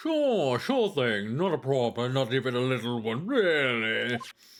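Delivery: speech through a big, jutting underbite. Voicing a character who agrees to testify: jutting-jaw underbite voice. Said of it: "You wanna know how I make that voice?".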